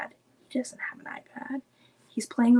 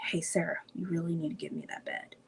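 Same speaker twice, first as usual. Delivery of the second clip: very quiet, intimidating whisper; 5 semitones lower, 10 dB quieter than usual. Retelling what her brother said to her: imitating him whispering. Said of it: "he would be whispering".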